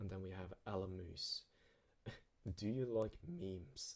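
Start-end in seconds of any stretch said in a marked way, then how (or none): 2.6-4.0 slow, with voice cracking. Reading out the next question from a subscriber, voice crack. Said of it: "That was a voice crack".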